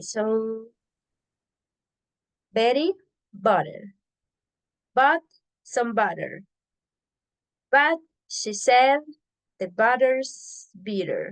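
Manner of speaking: slow, careful, deliberate reading aloud. Demonstrating a tongue twister for others to repeat, reading it slowly. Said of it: "We're going to do it slow".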